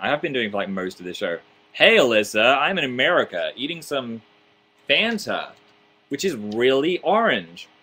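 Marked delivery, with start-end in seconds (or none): 1.7-7.7 slow, put-on American accent. Responding to a request to speak an American accent, put-on American accent. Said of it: "speak an American accent".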